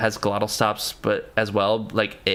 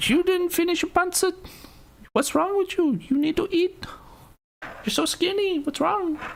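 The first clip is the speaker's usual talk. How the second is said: very high, fussing, nagging Filipino mother voice. Recalling an ex's Filipino mother, imitating ex's mom. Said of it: "Spot on impression of my ex's mom".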